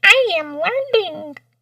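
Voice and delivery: very high-pitched, squeaky voice. Quoting a Simpsons line: Ralph Wiggum voice. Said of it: "From, uh, Simpsons".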